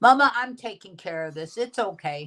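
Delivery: ordinary delivery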